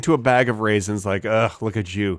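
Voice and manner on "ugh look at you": mock disgusted tone, lower. Acting out talking to a bag of raisins: imitating a disgusted tone. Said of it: "I didn't say it in that tone".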